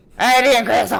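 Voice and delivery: put-on very loud, booming, strong pure Cajun accent. Retelling how a guy who spoke pure cajun greeted him: imitating a pure cajun accent. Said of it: "He was like pure Cajun".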